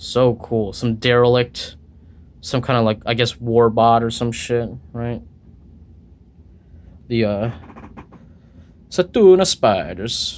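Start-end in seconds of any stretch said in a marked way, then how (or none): 7.1-10.4 sudden put-on Italian accent on the name. Showing off a design, the speaker names what is shown in an italian accent. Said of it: "I don't know why I said it in an Italian accent".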